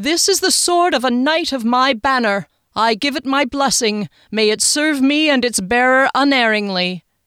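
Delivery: loud, high, proclaiming cry. The Duke holds his knight's sword high and blesses it, crying out. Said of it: "he cried".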